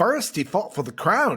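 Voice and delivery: botched blend of Irish and Scottish accents. Trying a British accent on a movie tagline, a bad Irish-Scottish blend. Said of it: "blend of Irish and Scottish and just bad".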